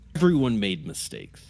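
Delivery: gruff, grunting muttering. Voicing a character glaring at a player: grunting mutter. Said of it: "mutters kind of, like, gruntingly".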